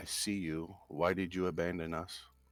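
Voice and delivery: hushed, whispered voice. Voicing a character who points at someone in a market: whispering. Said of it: "whisper to her".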